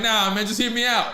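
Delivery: plain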